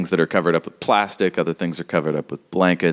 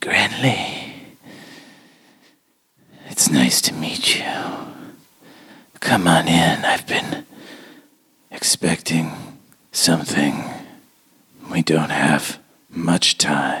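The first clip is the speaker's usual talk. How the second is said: vaguely malevolent, too-familiar, whispery creepy creature voice. A creature greets a player character telepathically, whispery creepy creature voice. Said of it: "And it's like a whispery".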